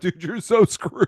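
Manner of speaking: high voice, laughing while talking. Retelling how Oliver reacts in the scene: imitating Oliver laughing while talking. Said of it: "Oliver starts immediately cracking up".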